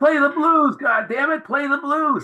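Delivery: loud, high-pitched screaming.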